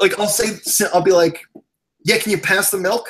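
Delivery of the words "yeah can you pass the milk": put-on snippy, sharp, curt, annoyed-sounding tone. Retelling how he asks his wife for something: imitating own sharp, mad-sounding tone. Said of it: "my wife always thinks I'm mad".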